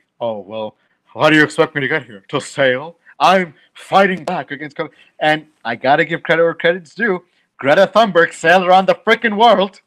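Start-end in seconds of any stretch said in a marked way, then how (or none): 0.2-3.0 put-on superior, condescending, talking-down tone. Retelling what a man said, imitating his condescending tone. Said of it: "he said condescendingly".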